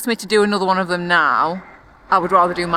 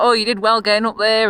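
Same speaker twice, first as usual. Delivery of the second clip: put-on Yorkshire accent, male voice; 3 semitones higher than usual. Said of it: "the most Yorkshire man you can possibly think of".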